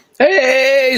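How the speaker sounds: high, loud, cracking voice on a stretched "hey". Host greets sports and drafts fans on a rough day, voice cracking. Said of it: "my voice is cracking right there".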